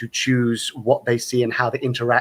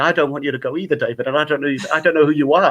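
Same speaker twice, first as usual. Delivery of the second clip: put-on tearful voice, crying through the words; 3 semitones higher, 3 dB louder than usual. Speaker recalling watching The End of Time, retelling crying through tears. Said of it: "I found myself crying".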